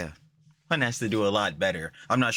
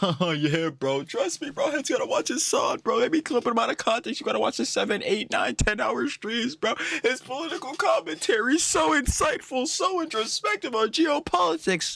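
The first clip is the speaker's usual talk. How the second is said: very high, sneering, mocking voice. Mocking how the g boys talk: mocking impression of g boys. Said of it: "You dead ass be talking like".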